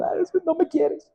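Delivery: whiny, breathy fake whimpering cry. Acting out a complaint to god after stubbing a toe: mock crying to god. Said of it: "Ya estoy llorando con Dios".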